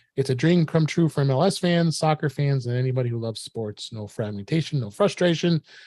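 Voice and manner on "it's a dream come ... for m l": usual speaking voice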